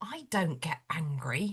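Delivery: put-on grave, very low, slow, dead-serious delivery. Retelling what the youngest child said when asked about getting cross: imitating a deadpan delivery. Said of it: "dead seriously just went".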